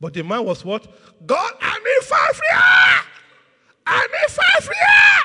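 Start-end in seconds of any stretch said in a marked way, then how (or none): 1.3-5.2 very high, very slow shout, rising and pleading. Telling a story, the speaker acts out what one man said, imitating a man shouting. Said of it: "The man was shouting at the top of his voice".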